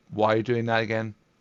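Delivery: plain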